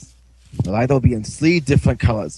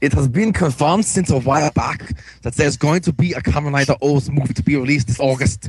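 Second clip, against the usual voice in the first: thick fake German accent throughout; 3 semitones higher than usual. Reading out a movie news item after being asked: put-on German accent. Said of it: "Turn it into a German accent".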